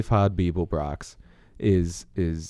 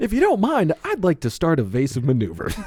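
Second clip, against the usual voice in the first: mock cheerful computer voice, higher pitch; 9 semitones higher than usual. Retelling a movie scene, imitating the happy ship computer. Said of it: "It's like".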